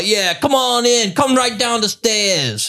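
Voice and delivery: very high, drawn-out Boston drawl. Retelling what the door guy said to the group, in a Boston accent. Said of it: "and this was his accent".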